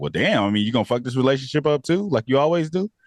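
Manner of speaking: mock snide, needling, sarcastic tone. Retelling how Molly jabs at a friend: imitating Molly being sarcastic. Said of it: "in a sarcastic way".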